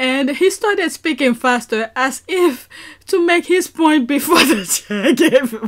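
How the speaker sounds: speaking through laughter. Reading a passage aloud from the screen, reading while laughing. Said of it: "let me stop laughing".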